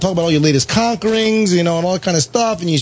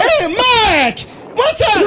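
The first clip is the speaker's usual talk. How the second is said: mock elation, much higher pitch, slower pace. Retelling how a friend's dad answers when the speaker calls, imitating Mr. Crump, elated. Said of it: "like all elated".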